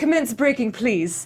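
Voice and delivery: put-on high-pitched elderly British woman's voice. Retelling what was said to the driver, in an old woman British voice. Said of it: "this like old woman British voice".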